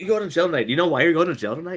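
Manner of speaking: put-on rapid, angry voice. Retelling what Andy said to the speaker: imitating Andy's quick angry talk. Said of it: "You know how Andy talks".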